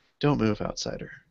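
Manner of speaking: silky, breathy woman's near-whisper, soft. Narrating an ambush, a woman's voice speaks to the outsider: soft, silky woman's voice. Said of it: "a woman's sort of soft, silky voice say".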